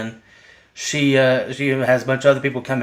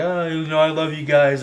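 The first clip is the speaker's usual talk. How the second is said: mock drunken talking, higher pitch; 3 semitones higher than usual. Retelling a movie scene where a character gets drunk: imitating drunk speech.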